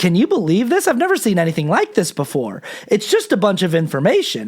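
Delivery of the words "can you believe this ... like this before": play-acted marvelling, swooping, astonished disbelief tone. Imitating someone explaining a movie's plot: imitating amazed disbelief. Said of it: "saying it in a tone where he's like".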